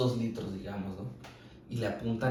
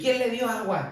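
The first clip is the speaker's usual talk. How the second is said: furious, shrill, very high, angry yell; 13 semitones higher, 7 dB louder than usual. Speaker retells a doctor waking a sedated patient by shouting; retelling a doctor shouting. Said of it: "Así le empieza a gritar".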